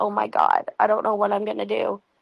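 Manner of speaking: mock-bawling, imitated bawling. Retelling a woman being followed who calls her friend, imitating someone bawling. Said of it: "And so she's bawling".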